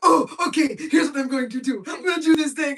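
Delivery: loud, high-pitched cartoon lemur voice. Retelling what the character always says: Julien voice. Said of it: "it's always Julian like".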